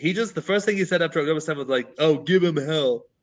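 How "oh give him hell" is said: put-on dopey, tired-sounding voice. Retelling what a commentator said after October seventh: Jordan Peterson voice, stupid and tired. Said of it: "with a stupid, tired voice".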